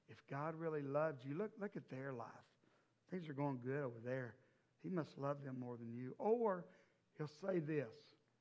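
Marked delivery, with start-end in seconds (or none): 0.2-6.2 acted whisper, lower and quieter. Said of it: "the enemy will lean in and whisper".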